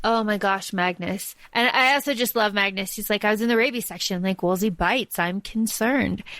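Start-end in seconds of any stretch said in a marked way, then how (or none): 3.2-6.2 put-on totally expressionless, flat, dry deadpan. Talking about a book, the speaker quotes a favorite character, imitating Magnus's deadpan. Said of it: "he says it really deadpan".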